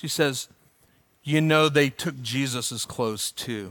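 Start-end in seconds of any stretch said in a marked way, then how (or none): 1.2-3.7 soft, hushed stage half-whisper. Retelling words said to a sister standing in line: imitating a half-whisper. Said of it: "Corrie ten Boom just whispered to her sister".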